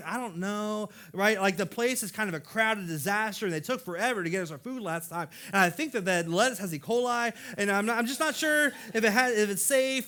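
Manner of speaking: plain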